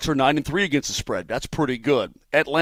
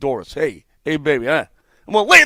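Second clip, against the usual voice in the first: smooth, schmoozing, sweet-talking New York accent; 4 dB louder than usual. Showing the listener how to sweet-talk a woman in a New York accent. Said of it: "sweet talk her in your New York accent".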